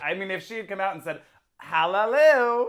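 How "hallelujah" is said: put-on loud, drawn-out, belted hallelujah in Australian accent. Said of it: "in, like, an Australian accent".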